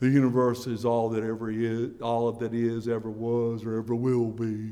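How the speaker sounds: low, slow, deliberate delivery. Recalling an impression heard on the radio, quoting: Carl Sagan impression. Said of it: "going through an impression of Carl Sagan".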